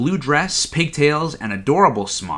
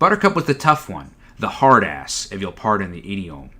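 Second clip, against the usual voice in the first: usual speaking voice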